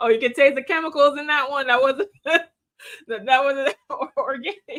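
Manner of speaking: high-pitched giggle, laughing through the words.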